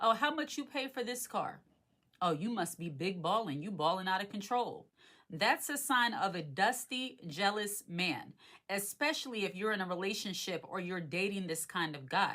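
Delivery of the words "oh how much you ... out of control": little snide, sneering, mock needling sarcasm. Acting out what a jealous man says, in a mock sarcastic snide tone. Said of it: "in that little sarcastic snide way".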